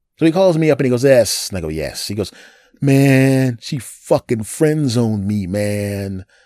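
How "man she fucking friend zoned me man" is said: put-on slow, drawn-out whiny voice. Retelling a close friend's phone call about being friend-zoned, imitating someone whining. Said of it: "he's whining like a punk".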